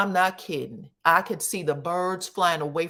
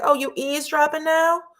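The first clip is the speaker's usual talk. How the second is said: mock very high, condescending, talking-down tone; 10 semitones higher, 4 dB louder than usual. Retelling a wife who hears her husband on the steps, mock-condescending. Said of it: "she's super condescending".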